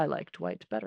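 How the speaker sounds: bone-dry, very sarcastic, unimpressed tone. Quoting a favorite book line: imitating Gandalf being sarcastic. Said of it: "Gandalf just very sarcastically says".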